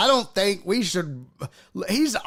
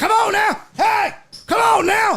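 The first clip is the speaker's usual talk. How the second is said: very high-pitched yelling voice; 12 semitones higher, 3 dB louder than usual. Retelling the handler yelling at a stubborn camel: imitating someone yelling. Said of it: "He's yelling at the camel".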